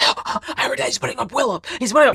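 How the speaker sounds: stage whisper pushed far too loud, high-pitched. Retelling how someone passed on news: imitating Keanu's loud whisper. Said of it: "he is whispering so loud".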